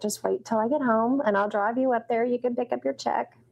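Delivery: ordinary delivery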